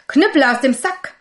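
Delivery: sudden, loud, high cry out. The young turner springs up as the innkeeper tries to steal the sack: called out. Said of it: "Er sprang auf und rief".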